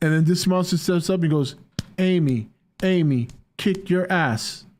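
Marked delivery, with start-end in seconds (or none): 2.0-4.6 very slow gorilla voice with each word drawn out. Acting out a monster stepping up to fight: Amy the gorilla voice. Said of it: "that's what I was going for".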